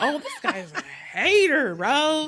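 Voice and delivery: yelling. Retelling own reaction while watching the movie: imitating yelling at the screen. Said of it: "finding myself yelling at the screen".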